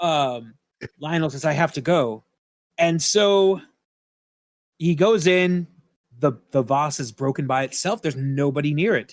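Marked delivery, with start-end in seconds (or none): none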